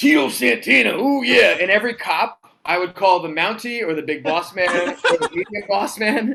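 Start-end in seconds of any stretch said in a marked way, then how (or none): 0.0-1.6 loud, rough, growling wrestler voice. Retelling greeting a man in the crowd: growly Macho Man impression. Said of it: "I was growly the whole time".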